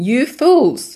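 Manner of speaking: high, loud yelling.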